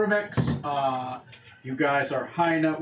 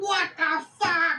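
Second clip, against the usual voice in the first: panicked goblin voice, higher; 14 semitones higher than usual. Voicing goblins reacting to a killing: goblins freaking out. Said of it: "some of the goblins start freaking out, like".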